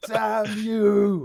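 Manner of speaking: furious yell. Voicing guards shouting up at fliers and shaking fists: angry shout. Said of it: "look up and just start shouting".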